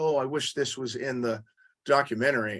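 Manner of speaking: ordinary talk, nothing marked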